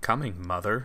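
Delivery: muttering under breath to oneself. Before sticking their head in the hole, muttering under breath. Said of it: "I'll kind of mutter under my breath".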